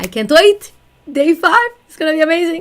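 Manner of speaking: high-pitched voice jumping way up, loud. Closing the video for viewers, looking forward to day five, in a high-pitched voice. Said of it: "my voice went so high".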